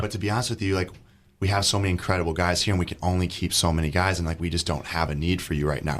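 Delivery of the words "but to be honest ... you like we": ordinary delivery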